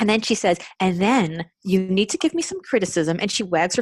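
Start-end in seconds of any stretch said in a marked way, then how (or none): 0.8-3.2 pointed, instructive, swooping sing-song tone. Retelling what she told the speaker about a compliment sandwich: imitating an employee's tone. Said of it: "she's literally using this tone of voice with me".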